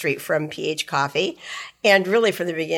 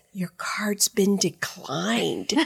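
mock soft voice, much quieter and slower; 3 semitones higher, 4 dB quieter than usual. Telling how someone leaned over on his first trip, imitating someone speaking softly. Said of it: "they said it really softly like that".

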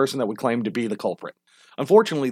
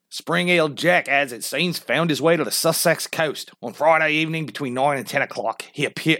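slipped-into Australian accent. Reading an article about springheel jack aloud, in an australian accent. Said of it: "I don't know why I'm Australian".

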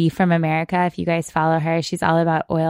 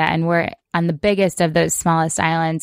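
ordinary talk, nothing marked

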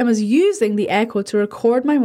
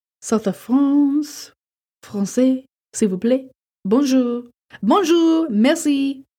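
slow, put-on French accent; 2 semitones higher than usual. Host of a pre-recorded episode mentions going to France: French accent. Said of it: "That's my French accent".

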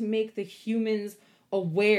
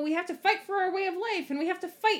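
high-pitched, cutesy cartoon raccoon voice; 9 semitones higher than usual. Describing a raccoon character in a cartoon, cute cartoon raccoon voice. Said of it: "he's saying it in this kind of cute cartoon voice".

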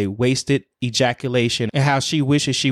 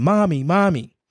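mock child's scream, higher pitch; 5 semitones higher than usual. Speaker recounts a frightening episode, acting out her child's cries for her; imitating a child screaming.

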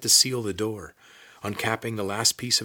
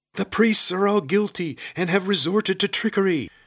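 very high, shrill, loud raised yell; 10 semitones higher, 7 dB louder than usual. A lizard lashed to a stone post strains at its rope, shouting. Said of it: "shouted the lizard".

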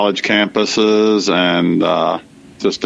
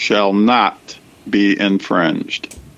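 not stressed in a slow, drawn-out ending. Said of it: "I emphasize the word "not"".

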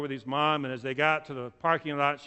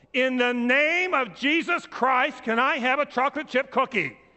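shrill, very high, loud shouting; 10 semitones higher, 5 dB louder than usual. Retelling a boy in a grocery checkout line asking his mom; retelling a loud shout. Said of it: "he says in the loudest voice possible".

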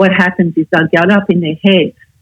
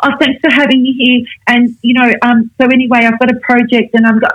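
rushed, eager, excited gushing, pitched up; 6 semitones higher than usual. The speaker imitates younger women starting to talk fast: mock-excited fast talk. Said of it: "they'll start talking fast, so they'll get excited".

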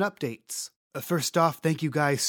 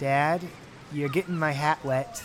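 usual speaking voice

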